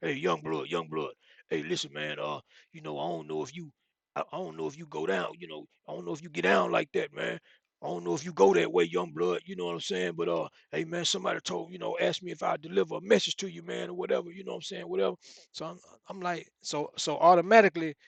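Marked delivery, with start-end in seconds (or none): 0.0-14.9 mock rough, raspy voice. Retelling how Troy came over in the gym one time, imitating Troy's raspy voice. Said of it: "He had a real raspy voice".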